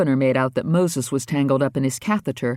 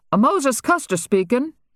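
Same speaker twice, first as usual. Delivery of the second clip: slightly, noticeably higher pitch; 11 semitones higher than usual. A narrator reads Moses answering the phone, slightly higher-pitched voice. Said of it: "Moses said in a slightly higher-pitched voice".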